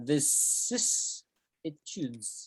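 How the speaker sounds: vicissitudes spelled out, drawn out, very slow and soft.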